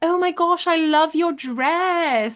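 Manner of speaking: put-on high British accent with drawn-out "dress". Retelling a voice heard from behind at a bar, in Draco Malfoy's British accent. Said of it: "I hear in a British accent".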